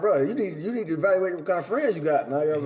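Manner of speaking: ordinary talk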